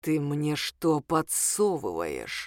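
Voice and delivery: squeamish, contemptuous hiss with swooping pitch. At the table where wrappers are swapped for money, the tall man speaks, hissing. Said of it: "прошипел".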